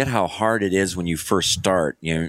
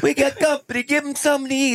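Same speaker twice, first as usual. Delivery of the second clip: put-on angry Italian man voice, higher pitch. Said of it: "angry Italian".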